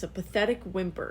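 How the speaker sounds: usual speaking voice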